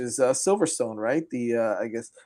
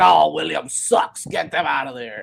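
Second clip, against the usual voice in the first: put-on sloshed, rough, slow, creaky drunk drawl; 3 semitones higher, 3 dB louder than usual. Retelling what some fans say, imitating a drunk twenty-five-year-old fan. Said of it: "that impersonation that I did there".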